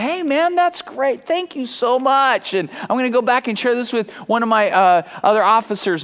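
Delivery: mock laughing, very high, slow and drawn out. Speaker retells an officer's thanks after being handed something, imitating someone laughing. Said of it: "he started smiling and laughing".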